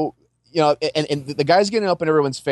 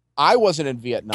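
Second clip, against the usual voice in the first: usual speaking voice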